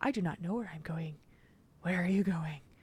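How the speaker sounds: very soft, hushed, silly spider voice. Retelling answering a three-year-old as her talking spider hand, silly talking spider voice. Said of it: "the talking spider".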